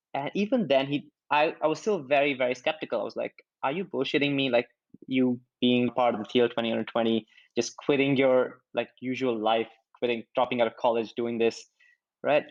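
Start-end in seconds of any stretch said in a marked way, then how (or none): none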